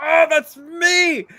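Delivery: shrill, very loud, high-pitched full-volume shout. Recounting their number finally being called in a draw, retelling a shout. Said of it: "Like shouting so that they know".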